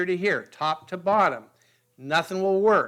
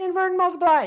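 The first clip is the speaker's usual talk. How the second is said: tiny, very high, squeaky little voice; 13 semitones higher, 3 dB louder than usual. Teaching how to divide fractions, voicing a pencil's answer in a high squeaky voice. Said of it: "in a high squeaky voice".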